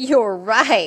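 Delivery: very loud laughing through the words. The younger sister answers Cindy, laughing. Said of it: "laughed the younger sister".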